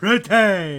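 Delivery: booming, very loud caveman voice. Reading out a man's one-word message to the other speaker, in a caveman voice. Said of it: "that one deserves the caveman voice".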